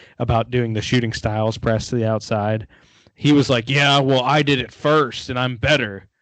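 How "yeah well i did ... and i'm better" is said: normal talking voice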